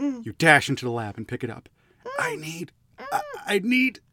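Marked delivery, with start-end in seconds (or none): 2.2-3.9 feeble, weak, very high voice. Narrating a story, a caller on the phone speaks in a weak voice. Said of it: "says a weak voice".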